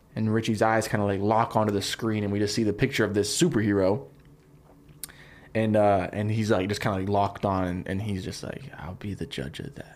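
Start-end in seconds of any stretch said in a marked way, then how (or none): 8.7-9.9 very hushed, soft-spoken, whispery voice. Acting out a line from a pitched movie scene: soft-spoken Richie voice. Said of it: "Very soft-spoken guy".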